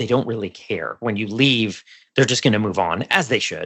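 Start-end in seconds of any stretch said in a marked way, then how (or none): 0.0-1.0 hushed, confiding half-whisper. Talking about loyalty to a law firm, the speaker adds an aside, half-whispering. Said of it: "I'm whispering here".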